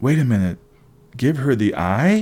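ordinary talk

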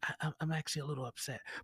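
soft, hushed, quiet voice. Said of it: "we just kinda quietly say".

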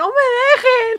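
terrified scream, very high-pitched and very loud. Telling of nearly being locked in a bathroom, retelling her shout. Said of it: "la neta sí grité así como de".

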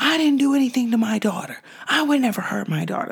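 put-on, high, fast, furious angry yelling. Speaker retells a man jumping from his seat at his accusers, reenacting his angry yelling. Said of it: "jumped up out of his seat and was yelling at them".

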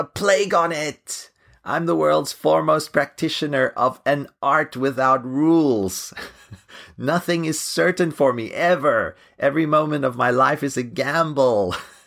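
mock railing cry.

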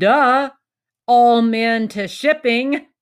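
mock, big, slow, booming voice. Retelling what Chris Hogan said to a surprised worker, Chris Hogan's booming voice. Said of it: "in his booming voice".

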